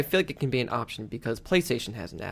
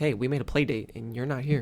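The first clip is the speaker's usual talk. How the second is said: normal talking voice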